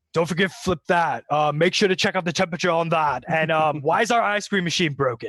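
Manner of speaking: loud, high-pitched screaming. Voicing a Minotaur in a suit yelling orders at young workers: screaming Minotaur boss. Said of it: "just screaming at each and every one of these kids going".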